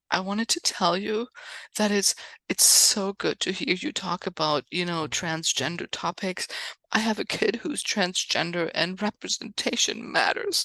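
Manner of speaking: put-on tearful voice. Retelling what a woman said after the show, imitating her crying. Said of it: "she's, like, crying".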